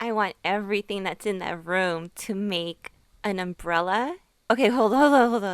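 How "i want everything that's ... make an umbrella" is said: ordinary delivery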